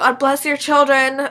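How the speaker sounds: loud, sudden yell. Retelling what the speaker yelled getting out of an elevator, retelling a yell. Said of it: "I yelled".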